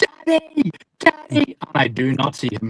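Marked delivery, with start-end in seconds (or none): 0.0-1.6 very high, loud, mock shrill child's shout. Recounting running toward the finish line as his son shouts: retelling a child's shout. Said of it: "he's shouting at me".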